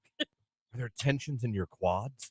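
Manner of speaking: soft, slow, soft-spoken creepy murmur. Retelling a massage, quoting what the masseur said, imitating a creepy soft-spoken voice. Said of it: "Very creepy voice".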